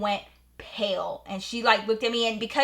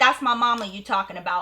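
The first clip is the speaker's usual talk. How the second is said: ordinary talk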